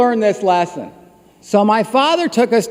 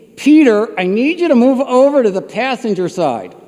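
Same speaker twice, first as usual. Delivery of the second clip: usual speaking voice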